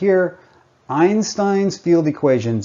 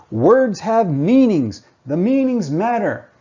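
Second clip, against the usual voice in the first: acted out, pitched-up, objecting talking-back tone; 5 semitones higher than usual. Imitating a listener shouting back an objection: imitating someone shouting. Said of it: "I can hear you shouting back at me".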